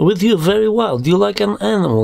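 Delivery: very high voice, heavy put-on Russian accent. Telling a hookup story, the narrator quotes the Russian girl in a Russian accent impression. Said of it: "my exquisite Russian impression".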